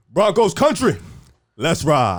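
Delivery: put-on deep voice with bass. Imitating a stadium call, bass in the voice. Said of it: "Put a little bass in the voice".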